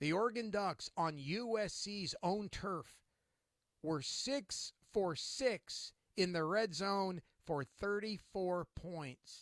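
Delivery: slow, deliberate, emphatic repetition.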